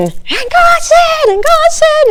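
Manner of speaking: very high, slow, drawn-out pulpit preaching voice. Recalling a preacher met after service, imitating a high preaching voice. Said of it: "his voice was so high".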